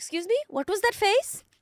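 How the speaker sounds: high put-on Indian accent, woman's voice. Retelling what a woman said after she turned around, in a put-on accent. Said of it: "I can put on this accent".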